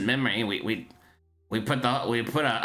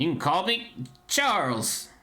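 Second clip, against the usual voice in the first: put-on gnome voice, higher; 5 semitones higher than usual. Voicing a gnome with a clipboard who asks for an order: gnome accent. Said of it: "He has to have an accent".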